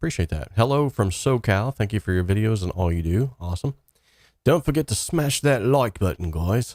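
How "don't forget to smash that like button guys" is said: sudden put-on British accent, pitched up. Thanking viewers for comments on videos, then a put-on british accent. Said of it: "I just did that in a British accent".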